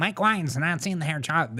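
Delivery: put-on tiny creature-like voice. Mocking the other speaker's lawyer voice, repeating the line like a munchkin. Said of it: "Can we talk about that voice".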